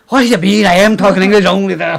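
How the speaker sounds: put-on Scottish accent, loud and high.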